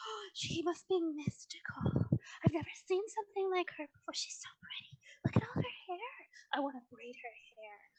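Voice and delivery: stage whisper full of excitement. Storyteller voicing onlookers who have never seen a centaur; whispering. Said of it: "you can hear them whispering to each other".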